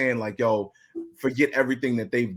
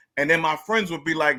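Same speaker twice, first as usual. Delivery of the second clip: ordinary delivery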